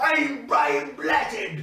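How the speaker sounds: extreme, intense, pushed-up high-pitched delivery. Explaining how to do character voices, imitating Brian Blessed. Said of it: "he always does the face where he goes".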